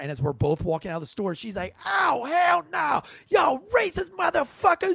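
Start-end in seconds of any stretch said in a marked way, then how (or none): 1.9-4.9 mock, very high, shrill, drawn-out furious shout. Retelling a woman's reaction to a parking ticket: imitating someone going nuts. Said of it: "she just goes nuts".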